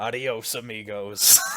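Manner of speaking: mock flat robotic cyborg voice. Retelling a comic game moment as Raiden leaves: Raiden deadpan line. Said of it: "super deadpan".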